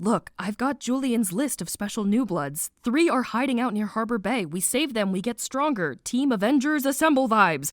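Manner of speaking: normal talking voice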